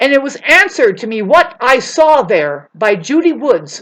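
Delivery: very loud, heated, worked-up insistent outburst. Speaker recounts something they questioned for years, getting heated. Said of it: "I'm getting all heated up".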